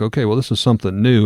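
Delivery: ordinary delivery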